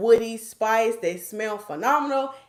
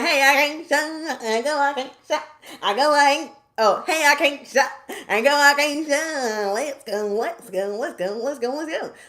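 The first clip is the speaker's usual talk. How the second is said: fake drunk slurring, higher pitch; 5 semitones higher than usual. Doing a quick drunk version of a line: put-on drunk voice. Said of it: "I gotta do the drunk version".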